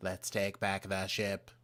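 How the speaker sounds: mechanical, robotic droid-style voice. Retelling how a ship's computer spoke in an episode: robot droid voice. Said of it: "I did a pretty good droid voice".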